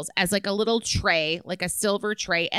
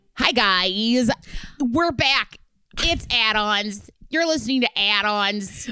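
put-on, fake aggressive tone; 3 dB louder than usual. Opening the show with a put-on aggressive delivery. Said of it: "what an aggressive opening".

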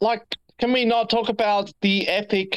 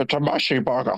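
put-on Scottish movie star voice, lower pitch; 7 semitones lower than usual. Joking about a messy burger, in a Sean Connery voice. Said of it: "Sound like Sean Connery".

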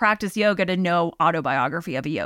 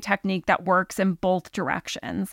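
ordinary delivery

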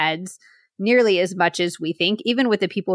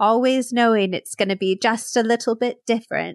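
tearful, teary, emotional delivery; 4 semitones higher than usual. Quoting a tearful scene from Love Actually: Emma Thompson impression. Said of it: "we need more impressions from you".

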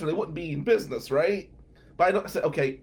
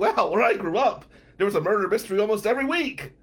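dry, heavily sarcastic delivery; 3 semitones higher than usual. Retelling a reply to a question at a murder mystery: retelling a sarcastic reply. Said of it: "the sarcasm starts coming out".

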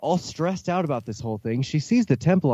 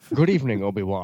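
put-on Scottish movie-actor voice, lower pitch; 5 semitones lower than usual. Doing a Liam Neeson impression for the others: Sean Connery-like voice. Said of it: "makes me sound like Sean Connery".

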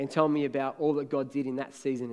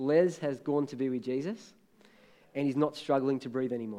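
plain

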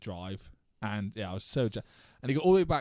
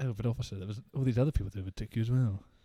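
mock extra-courteous, deferential, very polite. Retelling a reply to a police officer: imitating own politest tone. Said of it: "In my politest tone".

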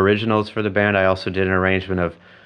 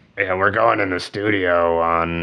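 offhand, slightly rough, gravelly bandleader voice. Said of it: "my [name] voice".

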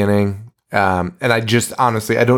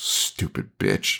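muttered under the breath, much lower and quieter; 13 semitones lower, 10 dB quieter than usual. Retelling a scene, voicing a woman's insult that nobody acknowledges, muttering under her breath. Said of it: "Sharon under her breath goes".

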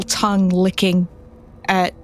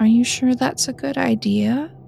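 put-on eerie, unsettling, creaky childlike voice; 4 semitones higher than usual. Game narrator voices someone behind a character at her car: creepy child's voice. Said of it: "It sounds like a child's voice".

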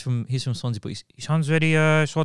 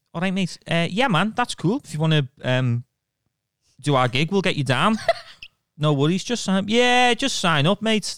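put-on Liverpool Scouse accent with lilt; 4 semitones higher than usual. Teasing the other speaker about his scouse lilt, in a scouse accent impression.

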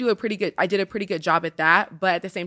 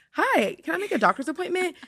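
very high, polite telephone voice; 11 semitones higher than usual. Describing life as a pageant titleholder, demonstrating the voice used on the phone. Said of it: "You know the voice you use when you get on a phone?".

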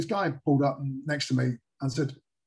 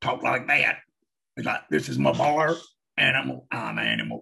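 put-on slow, drawling Southern voice. Retelling meeting a biker bar owner: Billy Bob Thornton in Sling Blade voice. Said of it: "he sounded like it was Billy Bob Thin-, Thornton in, um, in Sling Blade".

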